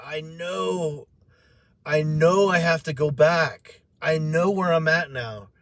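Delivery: put-on weeping, slow tearful pleading, "know" drawn out. Retelling own words to angels in heaven: retelling own crying plea. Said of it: "Why are you crying?".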